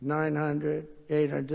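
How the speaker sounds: automated computer callout voice. Sitting with the pilots, the speaker imitates the computer calling out feet: imitating the computer voice. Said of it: "I call it the computer voice".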